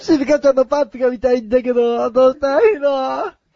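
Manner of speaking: put-on cartoon schoolboy voice. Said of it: "先にのび太の方やらせてもらってもいいですかね".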